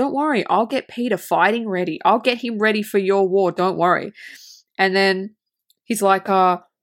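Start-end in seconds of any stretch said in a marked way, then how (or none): 0.0-4.1 airy fairy-like whisper. Retelling a movie scene where Tinkerbell whispers to Hook: imitating Tinkerbell whispering. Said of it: "kind of whispers in Hook's ear".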